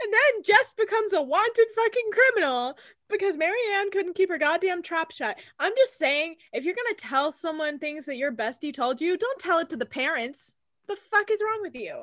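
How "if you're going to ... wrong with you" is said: fired-up, heated, worked-up cursing tirade. Podcast host scolds listeners who pass a friend's secrets to parents, heated. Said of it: "I'm very heated about this".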